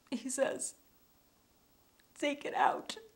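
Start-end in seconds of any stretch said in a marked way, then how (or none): 2.1-2.9 high, whispered pleading voice. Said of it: "in this pleading voice".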